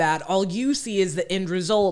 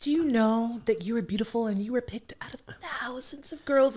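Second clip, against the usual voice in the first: put-on nurturing baby voice, higher and quieter; 3 semitones higher, 7 dB quieter than usual. Imitating Tyra Banks comforting an upset girl on the show: Tyra Banks baby voice. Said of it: "she would put on that baby voice".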